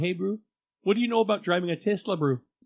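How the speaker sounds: put-on South African accent. After being told someone is south african, showing how the accent goes: put-on south african accent. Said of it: "the South African African accent's kind of like this".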